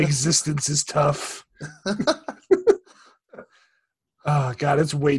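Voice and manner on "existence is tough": slow, drawn-out mock goth gloom. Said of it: "too hot to be goth".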